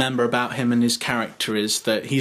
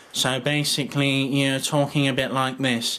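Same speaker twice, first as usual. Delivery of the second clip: speaking through the nose. Teaching a voice impression, showing the first step, nasal voice. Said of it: "we're going to speak nasally".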